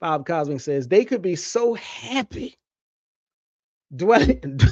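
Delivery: speaking while chuckling, laughing through words. Quoting what someone else says, laughing while talking. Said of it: "I'm sorry, I'm laughing".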